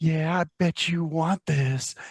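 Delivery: slow, cutesy put-on voice. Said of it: "change your voice up a little bit to try, I guess, to sound a little more cutesy".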